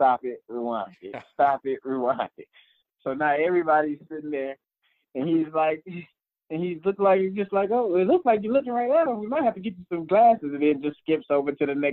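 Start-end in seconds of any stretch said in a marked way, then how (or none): 7.7-10.5 put-on very high, quick, breezy, nonchalant voice. Retelling how the coach talks in the meeting room, mock-nonchalant coach. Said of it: "but it's like so nonchalant".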